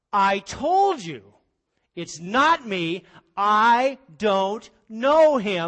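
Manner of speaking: furious, very loud, angry swearing. Retelling how he denied it the third time: acting out cursing.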